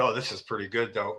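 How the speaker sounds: hushed, low mutter under the breath, to oneself. Retelling own words while watching oneself: imitating a mutter under breath. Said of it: "it was under my breath".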